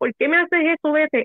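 high, tearful outburst through sobs. Retelling what the speaker said back then, imitating crying with eyes shut. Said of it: "yo pegué a llorar, cerré mis ojos bien duro y dije".

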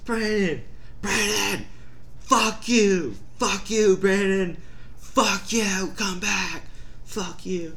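very high, loud, drawn-out hollering. Recounting how a pursuer ran after them yelling his name; retelling a yell after someone. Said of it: "he's yelling my name".

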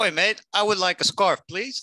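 fake English accent, very high and loud. Playing an England football fan asking a vendor for a scarf, fake English accent. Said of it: "If I insert oi, then it's English".

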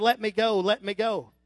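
put-on screaming in a man's voice. Telling a robbery story, quoting the man with the gun, imitating a man screaming. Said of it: "the guy with the gun is screaming".

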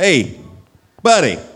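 loud, high call, carrying across distance.

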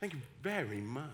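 put-on Oxford English accent. Retelling how he thanked someone, putting on an Oxford accent instead of his own. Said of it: "I put on my best Oxford accent".

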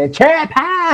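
put-on very high, screamed voice in a country accent. Recalling selling cherry pie gift certificates, imitating Nicole's country-accent scream. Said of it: "her good old country accent screaming".

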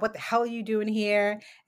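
ordinary talk, nothing marked

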